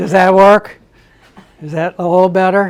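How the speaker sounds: very loud, projecting teacher voice. Speaker checks whether a listener who can't hear well can hear now, teacher voice. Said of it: "I'll try to have my teacher voice".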